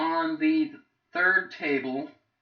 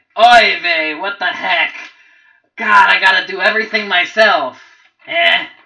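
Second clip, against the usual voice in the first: very loud, booming, fed-up, exasperated goblin grumble; 3 semitones higher, 13 dB louder than usual. Voicing the goblin boss reacting to the fight: exasperated goblin boss voice. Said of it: "the goblin boss is like".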